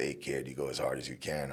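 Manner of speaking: deep, low, rough cowboy voice. Speaker retelling being suited up in headgear as Don Frye looks down, deep Don Frye voice. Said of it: "his voice is really deep".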